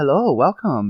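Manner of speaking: sugary, sweet storybook cartoon voice. Imitating how the other speaker welcomes people on a live: sweet Disney-character voice. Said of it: "your voice sounds like a Disney character".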